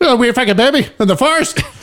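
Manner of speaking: very high-pitched, bad British accent. Introducing a guy back from London, in a bad British accent. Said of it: "I know that's like an Irish accent. It's the best way I can't do a British accent".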